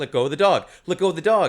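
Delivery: plain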